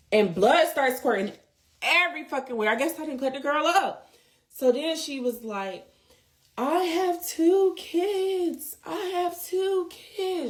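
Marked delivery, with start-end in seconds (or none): 6.5-10.5 very slow, high-pitched, drawn-out scream. Retelling what a woman screamed after being cut: imitating someone screaming. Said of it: "That's when she starts screaming".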